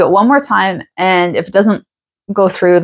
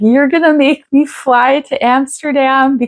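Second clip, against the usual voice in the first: play-acted high, tearful crying, disbelieving tone; 8 semitones higher than usual. Retelling a call with an airline agent about changing a flight; imitating own crying. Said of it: "And I started crying. I'm like".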